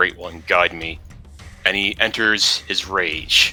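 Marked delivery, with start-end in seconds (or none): 0.0-1.0 hushed, grumbled mutter under the breath. Voicing a character just before entering a rage: muttering under his breath. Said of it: "he's gonna mutter under his breath".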